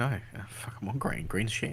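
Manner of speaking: plain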